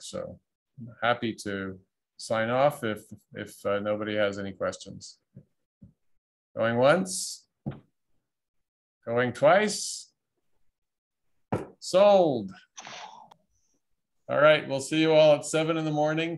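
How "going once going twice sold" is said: auctioneer-style patter. The host signs off a session, like an auctioneer. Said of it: "just do it like an auctioneer".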